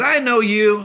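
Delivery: put-on heavy Latin American accent, laid on strong, high, loud.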